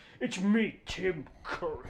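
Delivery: lush, drawn-out theatrical delivery. Showing how the film's Dark Lord talks: Tim Curry voice. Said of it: "he talks like".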